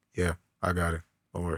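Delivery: very calm, low, soft stoic voice. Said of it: "Just very calm, stoic".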